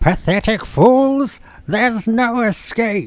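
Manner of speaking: very high-pitched villainous robot voice. Retelling a chase scene from the original Transformers film: bad Starscream voice. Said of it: "I can't do a Starscream voice properly".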